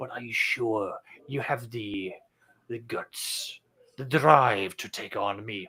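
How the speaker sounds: slow stage half-whisper in a fake Eastern accent. Speaker walks around people and leans in, half-whispering in a put-on Eastern accent. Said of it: "start whispering towards them".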